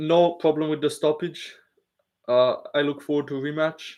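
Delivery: mild, understated delivery. Trying out a Yuri impression on the spot: Yuri Prochazka impression. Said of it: "let me try and think of a Yuri impression".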